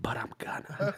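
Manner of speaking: whispered, threatening, close to ear. Showing how to deliver a threat into someone's ear: whisper in their ear. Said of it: "lean into their ear and you whisper".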